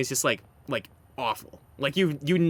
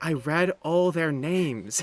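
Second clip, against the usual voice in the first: put-on sincere voice. Retelling a funny line from a character: imitating Anvi's sincere delivery. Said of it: "that singular voice line sold me".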